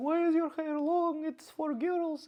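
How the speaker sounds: high, squeaky, fussing grandma voice, slowing down at end.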